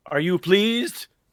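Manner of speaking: calling out. Playing a character who yells out to the mob: yelling to the mob. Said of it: "I'm just gonna yell out to the mob".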